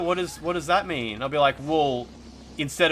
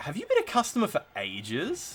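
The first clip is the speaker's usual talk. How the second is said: put-on disgusted tone, swooping, ages drawn out; 6 semitones higher, 4 dB quieter than usual. Recalling a sales pitch question to a customer, mock-disgusted question. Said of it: "Like I would say it like that, like I was kind of disgusted".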